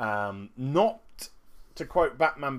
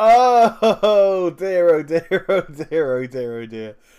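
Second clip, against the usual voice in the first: very loud, drawn-out chuckling to oneself; 6 semitones higher, 13 dB louder than usual. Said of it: "I tell you why I'm chuckling away to myself".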